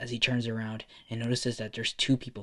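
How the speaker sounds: plain reading voice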